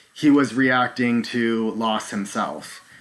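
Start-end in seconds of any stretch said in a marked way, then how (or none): none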